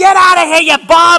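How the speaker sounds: very loud, shrill, screaming yell. Retelling how an old lady at a ballgame screamed at a batter: imitating an old lady screaming. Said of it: "she starts screaming at him".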